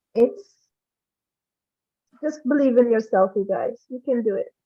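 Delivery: tearful voice, crying while talking. Thanking the group after being praised, crying while talking. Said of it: "I'm crying. I can't talk right now".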